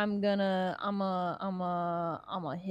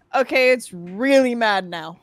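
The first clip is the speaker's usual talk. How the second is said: full-throated yell, very loud; 3 semitones higher, 14 dB louder than usual. Speaking in character as a huge creature stirs: yelling in character. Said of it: "I just kinda yell".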